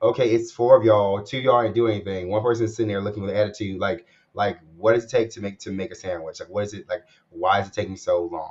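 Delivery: ordinary delivery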